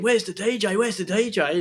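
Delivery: put-on screaming, high-pitched and urgent. Telling of someone running out of the club, imitating someone screaming. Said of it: "someone come running out the club screaming".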